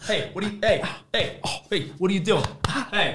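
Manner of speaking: scary, aggressive, harsh scolding tone. Demonstrating how to discipline a son testing limits: aggressive scolding. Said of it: "It's very aggressive".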